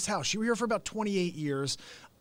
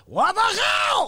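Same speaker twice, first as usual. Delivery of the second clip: drawn-out scream in a Russian accent; 9 dB louder than usual. Retelling an old catchphrase bit, screamed in a russian accent. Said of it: "coupled that with a Russian accent".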